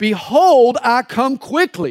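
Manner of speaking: shouted, very slow and stretched out. Retelling how a man whose mind went blank shouted scripture, retelling a shout. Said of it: "he shouted".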